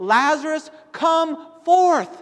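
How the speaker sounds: very loud, high, ringing commanding call. Retelling a scripture scene with mourners gathered, the speaker quotes a command: loud voice. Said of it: "Jesus says in this loud voice".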